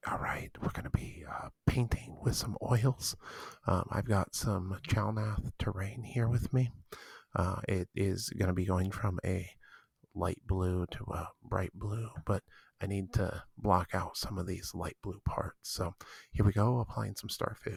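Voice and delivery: mock ASMR whispering. Performing a bit after being asked for a little ASMR: put-on ASMR whisper. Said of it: "can you give us a little A S M R?".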